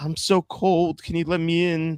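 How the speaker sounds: put-on very high, pleading old woman's voice. Retelling a show's opening scene, an old woman at the window: imitating an old woman pleading. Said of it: "an old woman's like".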